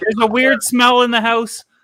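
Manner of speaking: put-on frightened girl voice. Joking about a girl in a video who looks frightened: imitating a frightened girl. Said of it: "the other girl's just frightened".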